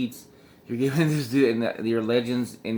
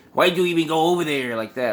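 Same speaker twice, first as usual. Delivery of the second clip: mock crass, obnoxious voice, pitched up; 5 semitones higher, 3 dB louder than usual. Retelling how an angry seller answered a question: imitating a crass voice. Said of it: "starts getting his crass voice".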